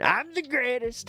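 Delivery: very high, half-hearted put-on voice, pitch pushed up. Showing the usual impression everybody does: Trump impression. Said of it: "this as the impression".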